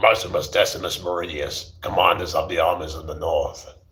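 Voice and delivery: gruff film-hero voice with a rough edge. Attempting a film line as Russell Crowe, Russell Crowe voice. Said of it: "my attempt to the Russell Crowe has that kind of gruff kind of voice".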